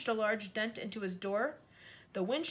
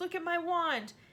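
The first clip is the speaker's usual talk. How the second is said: trembling, quavering, shaky and high-pitched; 8 semitones higher than usual. Narrator reads a character's line after a car crash, in a shaky voice. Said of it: "said Ron in a shaky voice".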